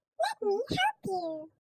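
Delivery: tiny, squeaky, very high mouse voice. Narrator reading a fable, the tiny mouse speaks to the trapped lion; squeaky mouse voice. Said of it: "Squeaked the mouse".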